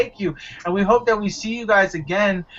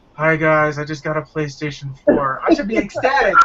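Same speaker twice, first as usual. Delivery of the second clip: utterly miserable, saddest, most dejected voice; 4 semitones lower than usual. Recalling recording a late unboxing video, imitating own saddest voice. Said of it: "you hear the most saddest voice".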